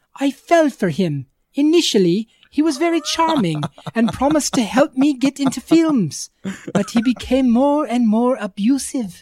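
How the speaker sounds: put-on Scottish nanny accent. Reading aloud a quoted statement, in a Mrs. Doubtfire voice. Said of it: "that's my Mrs. Doubtfire".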